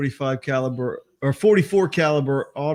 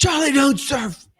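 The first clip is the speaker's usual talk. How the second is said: put-on very high-pitched, drunken shout; 12 semitones higher, 4 dB louder than usual. Acting out what will be yelled at an actor in a bar: imitating a drunk yell. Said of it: "I'm just gonna yell at him".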